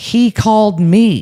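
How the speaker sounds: high, mock confused, indignant, insistent yelling. Retelling how Paisley yelled back about answering the phone: imitating someone yelling. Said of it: "yelling at me".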